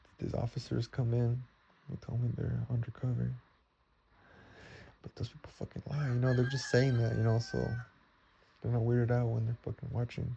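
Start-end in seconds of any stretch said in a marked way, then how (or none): none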